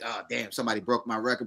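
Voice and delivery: low, quiet, quick salty grumble.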